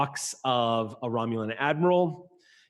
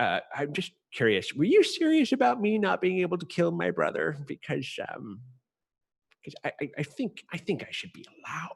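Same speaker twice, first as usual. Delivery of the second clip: whispered aside, much quieter; 4 semitones higher than usual. A character quietly whispers a question off to the side. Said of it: "It's very quietly whispered off to the side".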